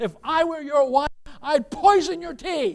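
high, loud shouted, cutting tone. Retelling how an angry official stood and shouted at Churchill: imitating a woman shouting. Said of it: "she stands up and she shouts at him".

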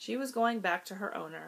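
ordinary delivery, nothing marked

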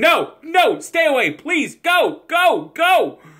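play-acted shrill, swooping, very high, drawn-out scream. Imagining being a player who sees the trainer coming, screaming. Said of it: "I'm screaming".

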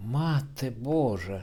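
sudden crying out. A maid reacts to news that the man is joining the army, exclaiming. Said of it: "вигукнула пані Мілерова".

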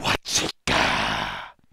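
deep, slow, booming monster voice. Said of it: "you hear this voice say".

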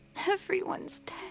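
tearful, crying while speaking. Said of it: "She is crying actively".

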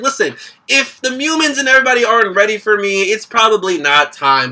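plain

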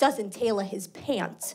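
acted, dry, flat, plain matter-of-fact delivery. Retelling mom's answer about the principal, imitating mom speaking very factually. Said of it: "she says very factually".

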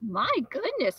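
sudden, loud exclamation. Narrator reading the storekeeper's reply to John, exclaiming. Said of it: "the storekeeper exclaimed".

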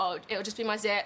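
plain

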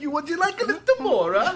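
put-on Italian accent. Retelling a producer talking to a customer: imitating someone slipping into italian accent. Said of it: "she turned Italian".

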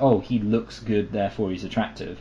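ordinary delivery

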